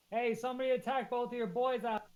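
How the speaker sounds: shrill, loud, high yelling. In a tabletop game, a player's character yells into a tavern. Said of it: "I'm gonna yell into the tavern".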